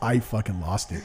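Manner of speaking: ordinary talk, nothing marked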